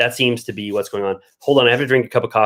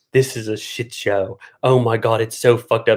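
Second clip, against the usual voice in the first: dramatic reaction in reality TV style. Recapping a trailer, imitating how Lisa talks: imitating Lisa's voice. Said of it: "How does Lisa talk?".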